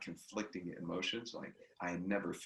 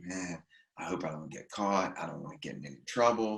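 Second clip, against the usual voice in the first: put-on panicked voice, louder; 6 dB louder than usual. Retelling what the brother said while driving away: imitating someone panicking. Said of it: "He's just, like, panicking".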